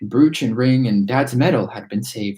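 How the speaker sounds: plain reading voice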